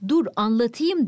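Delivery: ordinary delivery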